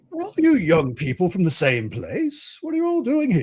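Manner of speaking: grand, high-swooping voice. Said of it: "he has this very regal voice".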